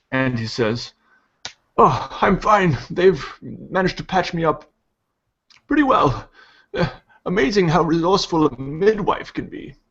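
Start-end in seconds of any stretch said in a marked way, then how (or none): 1.7-9.7 put-on wizened old man voice, pitched up. Voicing an old wizened priest propped up in a wagon: old wizened priest voice. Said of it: "the old wizened priest here sitting".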